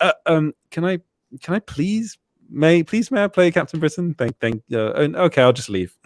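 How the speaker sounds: apologetic, stammering, timid, overly polite British manner. Acting out asking for a role too politely, overly polite british manner. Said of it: "I'll probably be too British about it".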